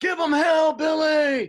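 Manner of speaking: very loud, high-pitched yelling.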